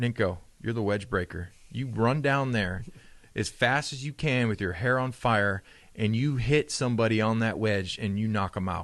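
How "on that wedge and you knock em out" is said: ordinary talk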